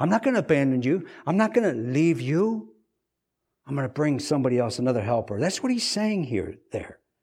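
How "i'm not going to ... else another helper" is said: plain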